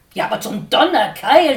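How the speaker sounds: shouting. Dickkopf answers Herr Sperling, shouting. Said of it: "schrie Dickkopf".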